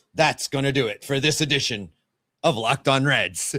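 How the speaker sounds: broadcast news anchor announcer delivery. Signing off the episode in the best Anchorman impersonation. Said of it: "with my best Anchorman impersonation".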